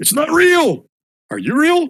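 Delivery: very high, loud panicked yell. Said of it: "he starts yelling".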